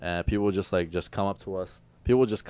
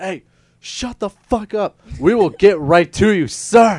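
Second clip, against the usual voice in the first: very loud, shrill, high-pitched yell; 12 semitones higher, 13 dB louder than usual. Telling a story about a manager and a man in her face, imitating her yelling. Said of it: "she just yells at him".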